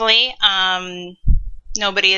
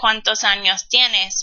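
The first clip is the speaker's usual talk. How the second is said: plain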